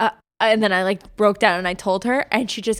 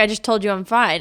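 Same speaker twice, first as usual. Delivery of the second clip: ordinary delivery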